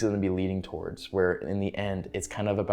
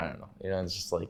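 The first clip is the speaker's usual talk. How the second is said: ordinary talk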